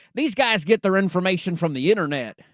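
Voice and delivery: put-on Southern accent. Retelling someone's remark about these guys, in a put-on Southern accent. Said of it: "I don't know why I'm going Southern accent, but I'm going to keep going with it anyways".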